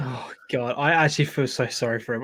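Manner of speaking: words broken up by laughter. Saying sorry for someone, laughing while talking. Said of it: "I know I'm laughing".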